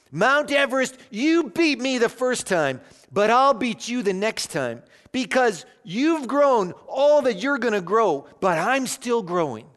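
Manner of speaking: play-acted, loud, high-pitched, defiant declaring tone. Telling how the climber addressed a picture of the mountain, in a loud voice. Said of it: "he said in a loud voice".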